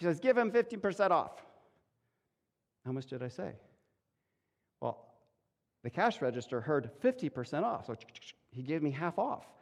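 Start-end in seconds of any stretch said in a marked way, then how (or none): 0.2-1.4 put-on thick Chilean Spanish accent, higher pitch. Retelling what a man said to the kid at the register: thick Chilean Spanish accent. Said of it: "he says through his thick accent".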